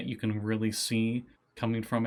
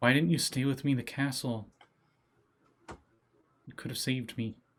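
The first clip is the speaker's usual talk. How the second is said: put-on eerie girl voice; 3 semitones higher than usual. Voicing a shadow that speaks to a player: voice of Hemlock from a shadow. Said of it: "you just hear the voice of Hemlock emanate from it".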